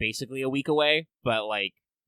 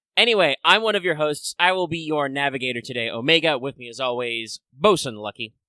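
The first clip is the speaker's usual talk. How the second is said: ordinary talk, nothing marked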